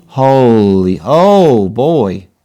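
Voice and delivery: loud, yelled-out screaming outburst. Watching pieces fly off a saw blade, screaming. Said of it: "I'm screaming".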